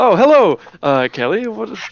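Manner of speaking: high, loud, feigned nonchalant innocence, fake-casual tone. Voicing a dad caught hiding in a store: acting very nonchalant. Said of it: "acting very nonchalant".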